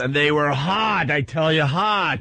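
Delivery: put-on very slow, drawn-out, insistent coaxing tone. Mocking callers who try to convince the hosts: imitating a caller trying to convince. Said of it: "the guys that are trying to convince us".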